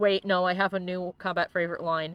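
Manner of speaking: plain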